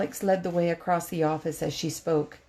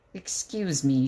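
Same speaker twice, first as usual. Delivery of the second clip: through gritted, clenched teeth, lower; 4 semitones lower than usual. Narrator reading a woman's line to her about-to-be ex-partner, through gritted teeth. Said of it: "she said through gritted teeth".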